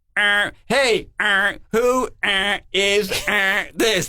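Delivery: very slow, choppy, halting words between beeps. Retelling calls over a line with a beeping busy signal: imitating talking between busy-signal beeps. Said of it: "but you could talk in between".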